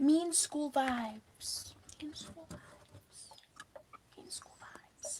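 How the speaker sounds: soft, slow, breathy whisper.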